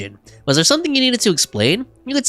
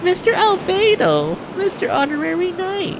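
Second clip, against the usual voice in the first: put-on squeaky, very high-pitched little-girl voice; 12 semitones higher than usual. Voicing an unvoiced character's lines in a scene, a horrible Klee impression. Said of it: "me doing a horrible impression of Klee".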